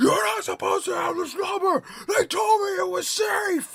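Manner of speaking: put-on very high, full-throated screaming rant. Retelling a rant at a spam caller: retelling a scream at a caller. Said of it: "I was yelling as loud as I can".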